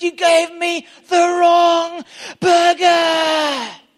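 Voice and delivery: very loud, very high, slow, shrill, furious yell. Retelling a man losing it at McDonald's, acting out a man flipping out. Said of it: "He completely flipped".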